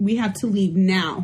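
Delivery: put-on angry, mock-irritated tone. A speaker acts out what they said when they got irritated, retelling it angrily. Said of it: "I was so mad. I was irritated".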